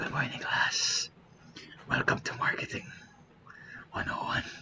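breathy, close-mic ASMR whisper. Imitating a marketing professor greeting the class: imitating ASMR-style talking. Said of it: "this Indian guy who talks in A S M R".

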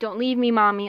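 mock crying, pleading. Retelling a scene where a robot begs Monica not to leave, imitating crying. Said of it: "like, crying".

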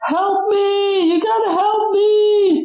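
very high scream, "me" drawn out. Narrating a game scene where a running miner approaches, screaming for help. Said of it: "and he screams".

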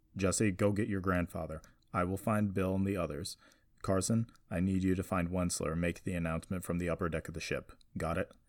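plain

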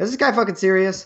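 very sarcastic, scornful, dismissive scoff of disbelief. Imagining being a billionaire team owner reacting to this guy, sarcastic and dismissive. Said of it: "in a very sarcastic and dismissive way".

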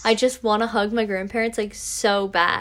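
ordinary delivery

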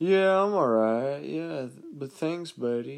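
slow, drawn-out, annoying buddy-buddy jackass voice. Retelling how an annoying guy at a gym talks: imitating a jackass's way of talking. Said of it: "the way he talks".

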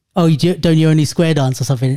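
ordinary talk

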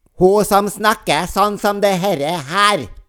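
high, cross, passive-aggressive teacher voice, "her" drawn out. Trying to recall a woman's name, doing a Yngvild Kjerkol impression like an angry teacher. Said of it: "høres ut som en veldig sint lærer".

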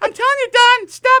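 shrill, blaring, very high, very loud furious yell. Describing their dad getting angry, the speaker is imitating dad's really mad yell. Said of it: "Then he gets really mad".

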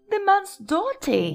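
muttered words, pitched very high. The grandmother reacts to the letter just read aloud, muttering. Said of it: "muttered Grandma Josephine".

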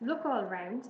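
ordinary delivery

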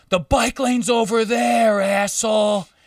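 play-acted, shrill screaming. Retelling a man in the street who screams and points at the speaker: imitating a man screaming. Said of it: "he screams at me and points".

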